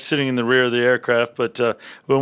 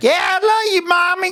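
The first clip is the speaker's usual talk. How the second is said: very high, put-on rural Southern US accent. Imitating a son who speaks like a redneck: imitating a son's redneck accent. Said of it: "He talk more like this".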